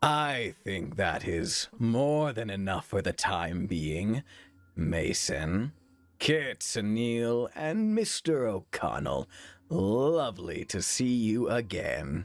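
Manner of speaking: very slow, deep, formidable, imposing voice. Greeting several people after dismissing another, in a deep, imposing voice. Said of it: "it is a deep, imposing voice".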